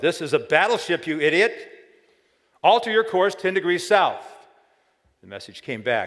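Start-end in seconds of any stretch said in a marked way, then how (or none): 0.0-4.2 put-on, high, furious ship captain's bellow. Telling the battleship and lighthouse story, the captain answers: retelling a captain's bellow. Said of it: "The captain bellowed".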